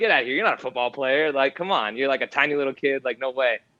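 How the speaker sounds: ordinary delivery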